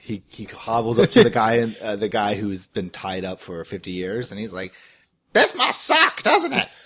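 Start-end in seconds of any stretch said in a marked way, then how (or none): 5.3-6.7 put-on chicken voice, much higher. Speaker voices their chicken talking to a man tied up for 50 years, chicken voice. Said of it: "I'm gonna do the voice".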